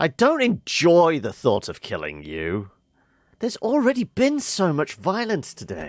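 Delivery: high, swooping, dripping, mocking sarcasm. Reading a game dialogue line aloud: sarcastic. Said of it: "can we say this sarcastically?".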